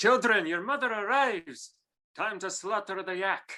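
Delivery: Scottish accent, pitched very high. Asked by a co-host to say his line from their show, Scottish accent. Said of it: "Scottish accent for our show".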